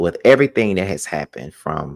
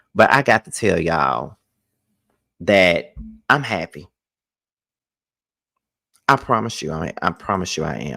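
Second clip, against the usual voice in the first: pushing through, fighting not to cry, holding back tears. Vlogging to viewers about a personal experience, holding back tears. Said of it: "taking so much out of me not to get all emotional".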